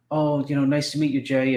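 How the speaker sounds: strong, put-on British accent. Retelling nerdy friends meeting jay backstage at a bodybuilding show: strong british accent. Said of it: "with strong British accents".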